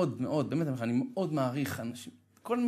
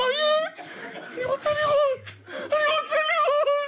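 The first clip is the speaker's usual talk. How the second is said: mock-panicked, fearful, much higher, louder; 6 dB louder than usual. Telling an audience how his eyes burned and he couldn't open them, retelling his panicked fear. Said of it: "באותו רגע פחדתי".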